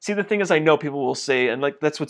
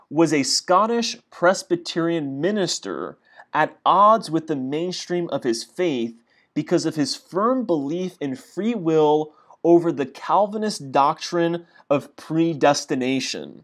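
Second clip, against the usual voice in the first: very slow, deliberate, word-by-word reading; 2 semitones higher than usual. Reading a passage aloud, reading very slowly. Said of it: "I have to read that very slow".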